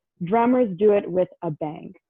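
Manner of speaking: plain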